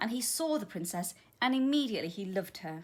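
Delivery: ordinary delivery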